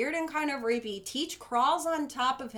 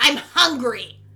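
play-acted mean, demanding, fierce bellow, very loud; 13 dB louder than usual. Describing the moment her character changes, mock-fierce, mean 'I'm hungry'. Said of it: "she gets real fierce, like, and mean".

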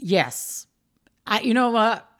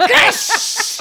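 very high, loud, panicky laughing. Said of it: "And I was like".

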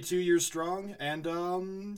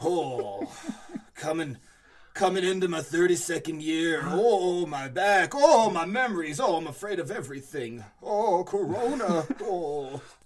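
put-on loud, lamenting old man voice; 5 dB louder than usual. Speaker introduces himself as an old wizard, in an old man voice. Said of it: "old man wizard [name] here".

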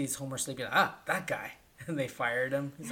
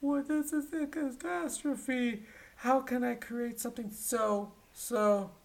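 very high, slow, drawn-out crying wail; 11 semitones higher than usual. Speaker retells a scene where an upset Mr. Burns cries, imitating Mr. Burns crying. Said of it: "mr. burns is crying".

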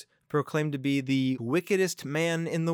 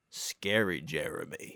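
put-on old voice, lower and quieter; 8 semitones lower, 5 dB quieter than usual. Switching into a persona for creepy topics, introducing it: old-sounding Scary Jeremy voice. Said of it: "you sound old".

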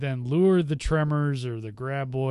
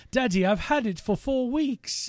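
very high-pitched, put-on British accent; 11 semitones higher than usual. Voicing the girl character confessing she kept the egg: British accent. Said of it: "give it a British accent".

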